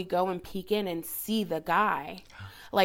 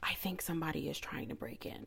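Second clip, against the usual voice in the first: mock whisper, much quieter; 3 semitones lower, 11 dB quieter than usual. Retelling what she said at the hallway door, imitating someone whispering. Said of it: "And she's like whispering".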